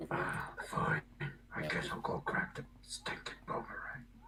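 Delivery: hushed, whispered wolf character voice. A player voicing their wolf character for the group, in a wolf voice. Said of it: "I get to do my wolf voice".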